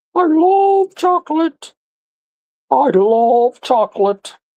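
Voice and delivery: put-on very high, very slow, dandy little puppet boy voice. Voicing a little swiss boy doll who loves chocolate: puppet voice for a swiss boy doll. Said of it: "all my puppet voices".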